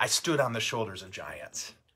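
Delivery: ordinary talk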